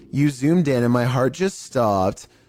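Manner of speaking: normal talking voice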